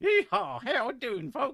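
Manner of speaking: booming, very high, shrill, exaggerated Southern American accent. Speaker mimics how americans sound to british people, exaggerated southern american accent. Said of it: "go for the Southern American accent".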